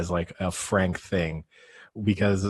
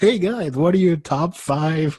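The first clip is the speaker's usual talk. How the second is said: put-on drunken yell, loud and high-pitched; 9 semitones higher, 5 dB louder than usual. Retelling what a drunk Frank yelled at strangers in a bar: imitating Frank yelling loudly. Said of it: "loudly yelled".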